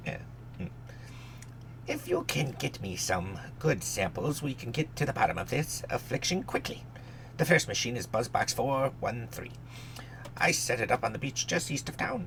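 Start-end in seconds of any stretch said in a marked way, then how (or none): 1.9-12.3 high, put-on fantasy gnome character voice. Reading a character's lines aloud, deciding to do a gnome voice. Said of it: "I should probably do a gnome, gnome's voice".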